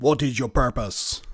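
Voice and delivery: booming, godlike voice. Retelling the being's question on the ship's bridge: booming Star Trek godlike voice. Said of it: "in a booming voice that makes the whole ship shake".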